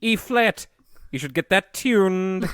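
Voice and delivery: very dry delivery, slightly high pitch. Acting out a favorite moment with Arthur's dad driving him to the lesson, in a very dry Alan Rickman accent. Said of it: "that accent is very very dry".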